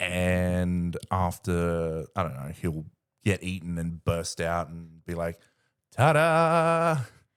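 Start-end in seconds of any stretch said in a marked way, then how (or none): 6.0-7.0 over-the-top, loud, drawn-out theatrical showman's flourish. Imagining a character bursting out of a monster: very theatrical. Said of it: "he does something very theatrical".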